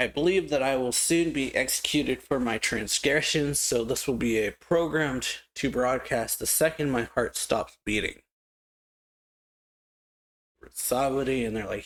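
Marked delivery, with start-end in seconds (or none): none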